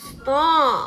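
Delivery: loud, growled, bear-like voice. Narrator reading Bear cutting off Mouse's reading aloud, growling. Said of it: "growled Bear".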